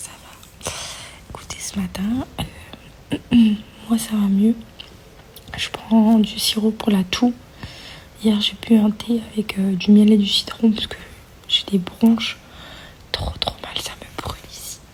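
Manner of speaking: speaking in a whisper. Talking to viewers while someone sleeps nearby: whispering. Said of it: "Je chuchote parce que Georgia dort".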